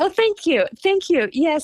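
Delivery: speaking through a smile. Thanking the other speaker for praising his work, in a smiling voice. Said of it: "I can hear the smile in your voice".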